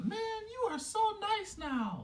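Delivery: very high swooping tone. Telling listeners what his best friend Jeff said to him, imitating Jeff's higher voice. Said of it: "you do not have to do that voice".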